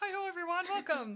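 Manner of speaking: put-on puppet frog voice. Describing a haunted house where a screen announcer welcomes people: Kermit the Frog voice. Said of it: "Kermit the Frog would be making an announcement".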